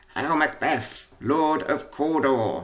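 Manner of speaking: croaking witch voice, very slow and drawn out. Reading the second witch greeting macbeth in a play script, croaky witch voice. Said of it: "croaky voice".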